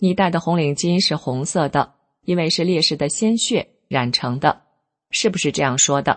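ordinary talk, nothing marked

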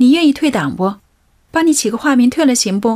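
loud, high calling voice.

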